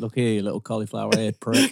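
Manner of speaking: menacing, tough put-on Welsh accent, rugby-player voice. Speaker acting out a rugby player confronting a man flirting with his wife: Welsh accent. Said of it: "The Welsh accent".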